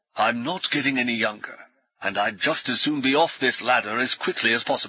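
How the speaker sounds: ordinary delivery, nothing marked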